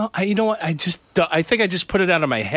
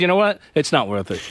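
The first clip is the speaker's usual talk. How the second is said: ordinary talk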